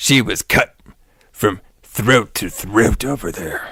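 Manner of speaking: dropped into a deep, low man's register. Trying to copy a man's voice while under the weather: imitating a man's deep voice. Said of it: "this guy had the best deep voice ever".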